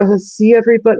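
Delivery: very high, breaking, squeaky voice crack. Mocking how a woman appeals to everybody when he won't let her go: imitating a cracking voice. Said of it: "her voice cracks a little bit".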